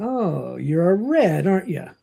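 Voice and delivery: put-on, slow, smirking, snickering sneer. Retelling a character's taunt at another man: imitating a snickering sneer. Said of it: "Panzer smirks and snickers at him".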